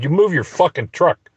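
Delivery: put-on shout. Retelling yelling at people blocking the way: imitating own yell. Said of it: "And I yelled at them".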